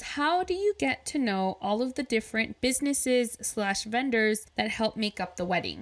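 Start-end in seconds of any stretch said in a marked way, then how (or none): none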